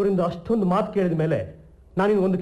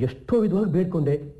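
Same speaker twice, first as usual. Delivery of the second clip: plain reading voice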